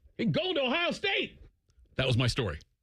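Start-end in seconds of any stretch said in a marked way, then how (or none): 0.2-1.4 very high-pitched yelled Southern drawl. Retelling how the coach announced a recruit: imitating Daryl Maine yelling in a Southern drawl. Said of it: "he yells that in his Tim May drawl".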